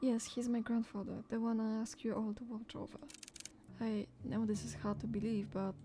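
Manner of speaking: plain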